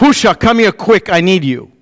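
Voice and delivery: mock, grave, very serious tone. Retelling calling to someone in the kitchen, in a mock-serious voice. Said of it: "I had a very serious voice".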